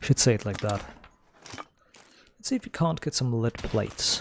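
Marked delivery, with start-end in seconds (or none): 1.5-4.2 mock British pronunciation. Trying out how the British would say a phrase, in a British accent. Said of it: "That's what how the British would say it".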